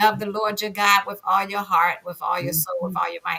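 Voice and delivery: ordinary talk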